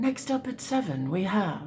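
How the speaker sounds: soft TV news anchor voice. Speaker imagines a horse with a comb-over as a TV presenter; news anchor voice. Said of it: "He looks like he's a news anchor".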